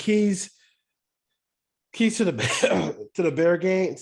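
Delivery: choked up, emotion welling. Speaker reading a listener's question about the Bears game, choked up. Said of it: "I'm choked up a little bit".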